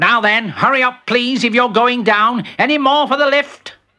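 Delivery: sharp-toned call. Reading a story, the mole stepping out of the lift to riders: said sharply. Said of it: "said sharply".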